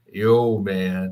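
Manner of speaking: put-on deep-voiced Southern American accent. Retelling a call he took on the hospital wall phone, in a deep Southern accent. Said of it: "He had this deep Southern accent".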